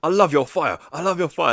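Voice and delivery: loud shouting voice.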